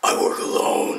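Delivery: gruff, choked voice forced out from the throat. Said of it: "talking gruff, like he got something shoved up his throat".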